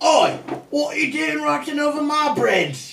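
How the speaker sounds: very high, loud, fake British accent goblin voice. Voicing a goblin card as a character: put-on british accent. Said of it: "this goblin has a British accent".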